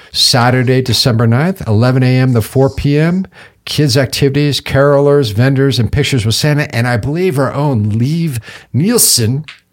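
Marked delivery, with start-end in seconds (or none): 7.9-9.5 Scandinavian pronunciation of the name. Listing event details, the speaker says a name with a Scandinavian accent. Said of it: "I say that with a Scandinavian accent".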